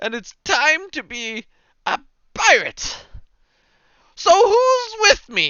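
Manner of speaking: brimming with confidence. Voicing a lute player introducing himself on stage: overly confident voice. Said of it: "with more confidence than any man should ever possess".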